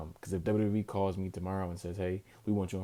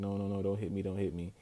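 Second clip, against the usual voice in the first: put-on pleading voice. Retelling a wrestling finish where one wrestler pleads with another: imitating a plea. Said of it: "is pleading with Cody".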